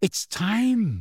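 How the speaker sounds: voice full of awe. Narrating a story, reading a character's line in an awestruck voice. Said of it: "said Hermione in an awestruck voice".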